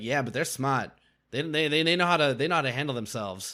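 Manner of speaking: put-on Boston-accented voice. Retelling what a contestant said on the show: Boston accent imitating Ken. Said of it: "Why did you have a Boston accent for Ken?".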